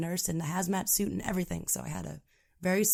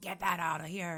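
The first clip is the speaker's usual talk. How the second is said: put-on crabby raspy old man voice, quieter; 5 dB quieter than usual. Retelling talking to a kid: imitating own crabby raspy old man voice. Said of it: "I sounded like a really crabby, raspy old man".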